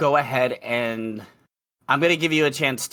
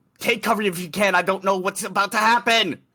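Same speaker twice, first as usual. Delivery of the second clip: high, loud, alarmed shouting; 6 semitones higher than usual. Unsure what comes next, [name] looks around and shouts to everyone: shouting a warning. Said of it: "and just shouts".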